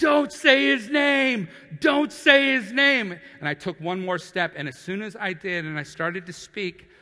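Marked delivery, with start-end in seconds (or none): 0.0-3.1 very loud, very high, drawn-out scream. Retelling how a man reacted to Jesus's name: imitating someone screaming. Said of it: "he started screaming".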